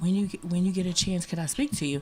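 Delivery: very soft, quiet, hushed voice. Retelling what a young lady asked after a speaking event: imitating a half-whisper. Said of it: "she whispered to me".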